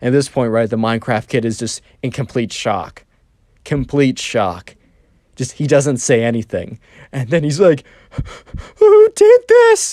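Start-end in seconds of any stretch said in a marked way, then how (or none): 8.8-9.9 mock very high, loud whimpering cry edged with rage. Retelling how the Minecraft kid reacted in shock: imitating a crying, whimpery voice. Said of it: "a crying, whimpery voice".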